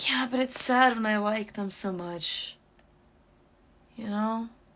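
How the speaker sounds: sounding tipsy, kind of wasted. Confiding to another speaker about feeling hurt, sounding kind of wasted. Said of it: "You sound kinda wasted".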